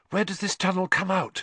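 out of breath. Hermione, following Harry through a tunnel, asks from behind him, breathless. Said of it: "Hermione asked breathlessly".

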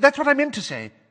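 very high, hasty, quick, flustered voice. Questioned sharply by Madam Bones, Mrs. Fig corrects herself, quickly. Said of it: "said Mrs. Fig quickly, patches of pink".

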